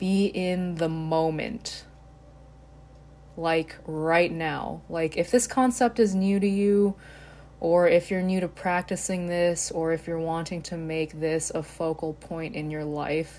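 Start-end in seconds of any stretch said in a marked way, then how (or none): 0.9-1.8 emphasis placed on the word 'moment'. Speaker saying their new favorite phrase, with emphasis on 'moment'. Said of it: "putting emphasis on the last word".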